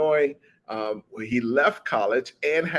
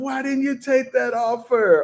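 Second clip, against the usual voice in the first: very high-pitched, loud yelling; 12 semitones higher, 4 dB louder than usual. Acting out a viewer yelling at the tv: imitating someone yelling. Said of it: "you're yelling at the people like".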